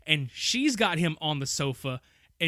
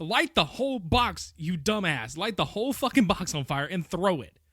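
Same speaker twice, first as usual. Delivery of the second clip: play-acted mild exasperated yell; 2 semitones higher than usual. Retelling watching the film with a friend: imitating screaming at the TV. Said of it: "are screaming at the T V at this point".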